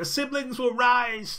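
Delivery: very high, strained voice, drawn out slowly. Calling from the other room, [name] repeats the line in a strained voice. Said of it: "in a strained voice".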